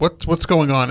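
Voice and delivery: put-on heated, irritated delivery. Retelling going over to confront a man about a car, acting out being heated. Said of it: "And I'm kind of heated".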